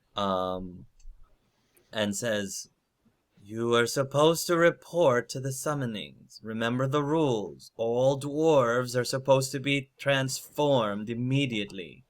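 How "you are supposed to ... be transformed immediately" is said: voice of a massive stone golem. Narrating a story, speaker voices the massive golem Branca, booming Branca golem voice. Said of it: "says in a very booming voice".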